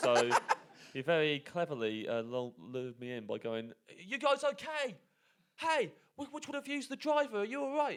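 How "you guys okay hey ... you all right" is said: very high, mock cheery, friendly called-out shout. Speaker retells a man who got out of a lorry shouting over; retelling a man shouting over. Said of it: "he shouted over".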